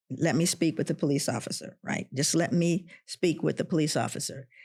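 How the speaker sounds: normal talking voice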